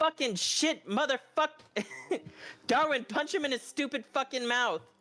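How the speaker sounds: high, acted screaming in character voice. Voicing a character who yells for an ally to punch someone: screaming. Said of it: "X is just gonna start screaming".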